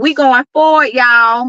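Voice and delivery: voice with a Dallas, Texas accent. Repeating the last line, now in a Dallas accent. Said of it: "In my in my Dallas accent".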